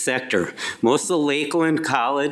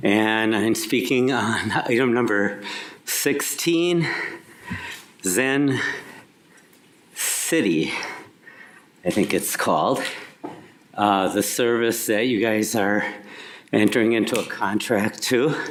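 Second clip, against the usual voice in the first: winded, panting, catching breath between words; 5 semitones lower than usual. Speaker who ran up after a late bus speaks on an agenda item, out of breath. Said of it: "trying to catch my breath".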